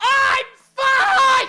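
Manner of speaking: shouting loudly. Doing a voice workout before a trial: shouting loudly. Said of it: "shouting, "I'm fine!" in a loud voice".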